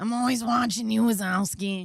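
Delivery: put-on raspy character voice. Asked for a Roz voice, delivering her catchphrase in Roz voice. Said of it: "Please, Roz voice".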